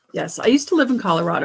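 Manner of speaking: ordinary talk, nothing marked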